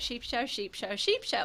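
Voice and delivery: quick triple repeat, rattled off with no pauses. Asked to say a phrase three times fast: said three times fast. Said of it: "three times fast".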